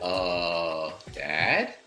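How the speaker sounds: soft, sheepish, timid, drawn-out "uh". Playing a character answering a father's call: sheepish like a teenager. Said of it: "sheepishly like a teenager would".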